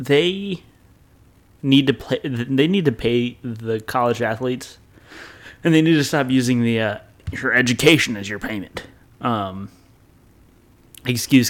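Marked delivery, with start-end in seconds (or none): 7.3-8.8 mock elderly man voice.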